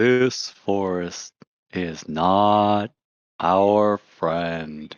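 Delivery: deep, low, hushed rumble, not stretched out. Role-play character speaking to everybody in the group, in Bashar's low hushed deep voice. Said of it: "in his low, hushed, uh, deep voice".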